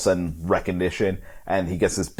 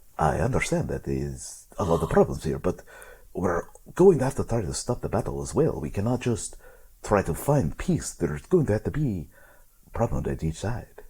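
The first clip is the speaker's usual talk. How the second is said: smooth, dapper character voice, slower; 3 dB quieter than usual. Narrating to listeners a voice their characters hear, smooth and dapper voice. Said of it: "one kind of smooth and dapper".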